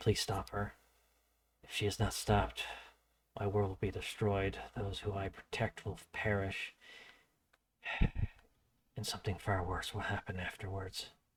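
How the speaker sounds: hushed whisper under the breath. Voicing a character who whispers a plea to a player: whispering. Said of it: "he whispered to you".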